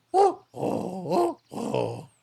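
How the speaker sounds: bird cry like a sixty-year smoker. The speaker shows how a long-time smoking creature would sound: chocobo that smoked sixty years. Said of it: "That's what they probably sound like".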